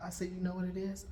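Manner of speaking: ordinary talk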